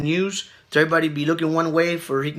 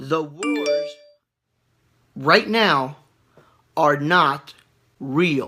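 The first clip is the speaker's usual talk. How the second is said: much slower, unhurried pace. Addressing viewers, the speaker repeats a point to make it understood, speaking slowly. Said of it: "I'm speaking slow like this".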